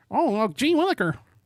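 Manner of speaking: very high, deliberately unpolished voice. Trying a Ned Flanders impression: bad Ned Flanders impression. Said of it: "That's not a good Ned Flanders impression".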